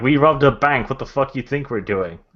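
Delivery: called out. Voicing Scrump answering a youth on the street: yelling back. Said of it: "Scrump yells back".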